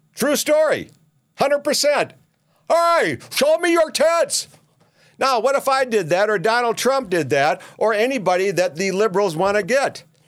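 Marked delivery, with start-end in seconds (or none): 2.7-4.5 play-acted, shrill, very high hollering shout. Retelling a man yelling to crowds from a pickup, retelling a yell. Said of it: "and he's yelling".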